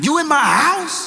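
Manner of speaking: very high, threatening, menacing tone. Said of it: "Bass in voice".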